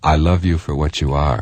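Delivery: ordinary delivery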